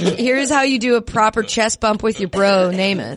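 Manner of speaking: ordinary delivery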